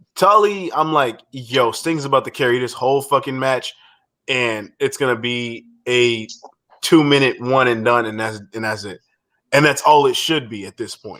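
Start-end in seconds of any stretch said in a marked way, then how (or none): none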